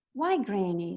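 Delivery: ordinary delivery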